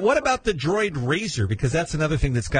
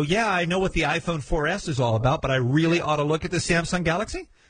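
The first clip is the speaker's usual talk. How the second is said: ordinary delivery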